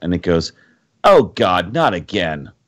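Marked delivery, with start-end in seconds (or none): 1.0-2.4 sudden, slow call with voice ringing out. Narrating a game scene where a boulder suddenly speaks; voice ringing out from a boulder. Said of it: "suddenly you hear a voice ring out".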